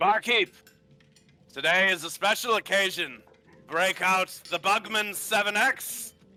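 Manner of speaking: put-on hollering. Voicing a dwarf host calling an order to the barkeep: yelling to the barkeep. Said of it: "he yells to the, uh, to the barkeep".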